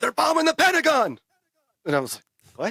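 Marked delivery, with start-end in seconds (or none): 0.0-1.2 put-on, very high, loud shouted voice. Retelling how a coach yelled out news after practice: imitating coach yelling. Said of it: "my coach just yelled out".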